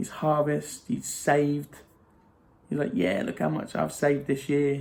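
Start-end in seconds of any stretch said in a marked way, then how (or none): none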